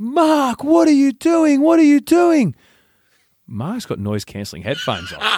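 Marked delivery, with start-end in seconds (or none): 0.0-2.5 piercing, very high-pitched, shrill scream. Telling a story, the speaker acts out their mum screaming at Mark: imitating mum screaming. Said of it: "my mum screams".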